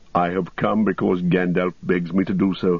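plain reading voice

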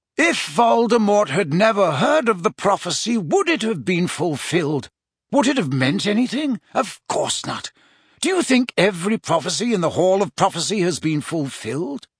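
ordinary delivery, nothing marked

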